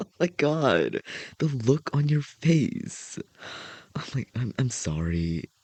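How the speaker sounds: high, giggly, words squeezed out while laughing. Apologizing to the other speaker for laughing at their face: laughing while talking. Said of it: "me laughing".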